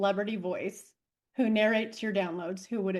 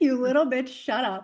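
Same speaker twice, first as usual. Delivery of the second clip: put-on scolding character voice; 3 semitones higher, 4 dB louder than usual. Answering what her spirit guide's catchphrase would be: voicing her spirit guide scolding. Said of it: "It would be like".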